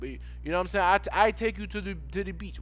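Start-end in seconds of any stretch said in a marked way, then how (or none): 1.1-2.6 bad put-on Jamaican accent, higher, slower. Imitating locals approaching a visitor, in a failed attempt at a Jamaican accent. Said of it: "I don't know how to do the accent".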